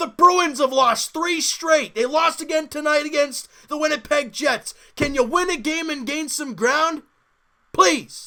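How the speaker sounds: heated, worked-up rant. Talking through hockey results and pleading with the bruins, fired up. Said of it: "I'm getting all fired up".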